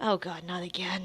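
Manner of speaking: soft, hushed mutter under the breath. Voicing a character who mutters under her breath: muttering under breath. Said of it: "you hear Poppy mutter in Draconic, uh, under her breath".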